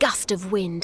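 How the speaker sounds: ordinary delivery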